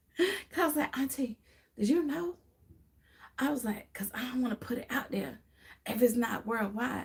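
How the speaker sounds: soft, hushed, barely voiced, secretive whisper. Speaker retelling to the audience what they asked auntie, whispering. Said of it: "I'm whispering, y'all".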